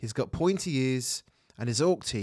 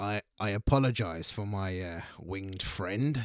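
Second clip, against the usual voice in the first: put-on cat-person voice, lower and quieter; 5 semitones lower, 3 dB quieter than usual. Game master voices a tabaxi private investigator at the bar, Narvu, tabaxi character voice. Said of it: "you see a tabaxi, which is basically a cat person. You're all standing at the bar at this point, and he says, "Excuse me, I saw you guys handling yourself back there, and, well, I'm a private investigator".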